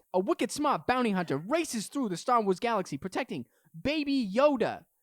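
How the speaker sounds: put-on Boston accent. A podcaster's audition for traditional radio, redone in a Boston accent. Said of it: "I went from nineteen forties radio voice to Boston".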